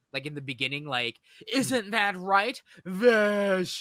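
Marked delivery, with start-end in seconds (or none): 1.5-3.8 mock theatrical villain voice, very slow, word drawn out. Retelling how a character taunts Vash: imitating a dramatic line delivery. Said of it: "he uses it in dramatic effect".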